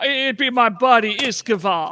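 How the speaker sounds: put-on Jamaican accent. Voicing a character who says who he is looking for, in a Jamaican accent. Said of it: "It's Jamaican".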